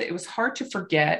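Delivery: ordinary delivery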